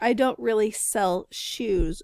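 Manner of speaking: slow, careful, deliberate articulation.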